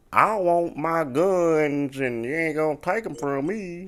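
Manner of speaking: exaggerated, over-the-top Southern drawl, very slow. Mocking how people impersonate someone from the south: exaggerated southern accent. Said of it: "when they impersonate somebody from the South, it's with a certain voice".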